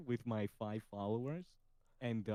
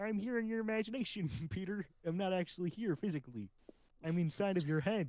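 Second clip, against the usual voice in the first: high-pitched frog puppet voice; 7 semitones higher than usual. Answering Peter, who asks what he is doing here, in a Kermit voice. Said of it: "Kermit's in my head again".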